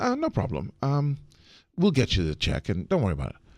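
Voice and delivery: calm, even, easygoing, relaxed tone. Retelling a reply to a landlady while angry inside: imitating own calm reply. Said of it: "but I'm saying it calmly".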